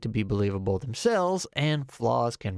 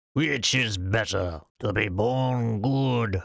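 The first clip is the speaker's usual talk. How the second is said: grand, squirrelly, slow, epic dragon voice. Quoting the wise words of a certain dragon, in an epic squirrel dragon voice. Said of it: "(epic squirrel dragon voice)".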